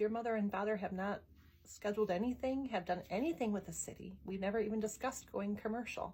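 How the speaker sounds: ordinary talk, nothing marked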